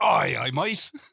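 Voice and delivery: put-on pirate accent. Asked if he will talk like this all show, he answers in a pirate accent. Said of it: "are you going to speak like this".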